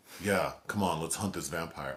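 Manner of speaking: ordinary talk, nothing marked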